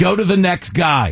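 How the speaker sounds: severe, clipped voice. Retelling what the third guy said when asked his job: imitating a stern reply. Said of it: "It said it in like such a stern".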